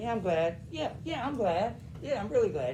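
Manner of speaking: insincere, hollow gladness. Demonstrating to a listener how repeating a phrase makes it sound sarcastic, voicing the repeated phrase. Sarcastic, insincere tone. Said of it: "what about it makes it sound sarcastic".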